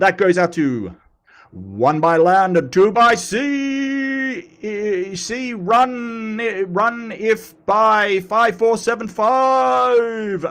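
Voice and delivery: drawn-out radio announcer. Reading out viewer shout-outs on YouTube, in a put-on announcer voice. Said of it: "I will get my announcer voice going".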